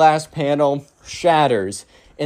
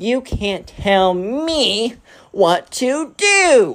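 put-on high, defiant spoiled brat outburst, very drawn out; 8 semitones higher than usual. Retelling a spoiled kid's retort to a restaurant manager: imitating an angry kid. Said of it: "the spoiled kid gets super angry".

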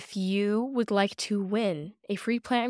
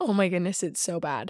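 rough, scratchy, sick-sounding voice; 2 semitones lower than usual. Speaker with a cold introducing the episode, in a scratchy voice from a cold. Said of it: "this kind of scratchy, scary voice".

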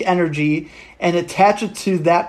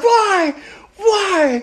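mock screaming, much higher. Retelling how she starts screaming at a clip, imitating a scream. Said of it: "She starts screaming".

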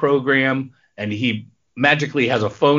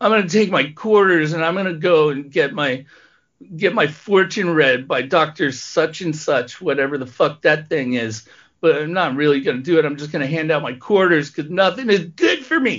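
pitiful, pathetic-sounding voice; 3 semitones higher than usual. Doing a voice for Joe while recounting his story: put-on pathetic Joe voice. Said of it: "i'm not going to do that voice anymore but joe is just a pathetic fucking piece of crap".

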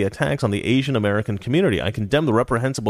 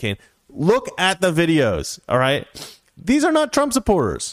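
ordinary delivery

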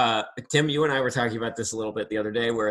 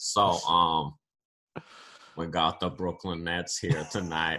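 cartoonish announcer voice, much lower pitch; 6 semitones lower, 4 dB quieter than usual. Imitating the man introducing the Brooklyn Nets, sounding like Cleveland. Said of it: "you make him sound like a Family Guy character".

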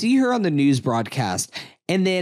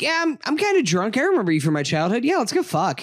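mock flippant tone, higher pitch; 8 semitones higher than usual. Imitating how an actress plays a film character: imitating a flippant delivery.

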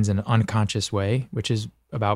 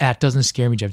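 plain

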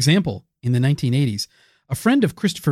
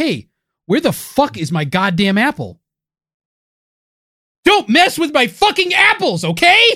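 mock outraged, very high, furious yelling; 10 semitones higher, 4 dB louder than usual. Acting out someone whose apple was stolen, shouting angrily. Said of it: "don't shout at me anymore about your fucking apples".

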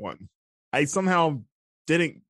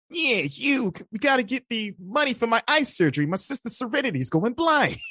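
put-on anime-style cartoon character voice; 8 semitones higher than usual. Showing off impressions of a favourite character, Yu-Gi-Oh! character impression. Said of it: "It's really good".

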